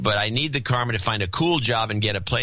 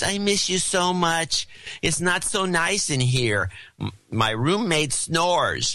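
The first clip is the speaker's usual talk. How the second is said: put-on dumb, goofy, silly idiot voice; 7 semitones higher than usual. Speaker imitating a man who phones from a ski trip, idiot voice. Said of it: "he keeps calling me with an idiot voice".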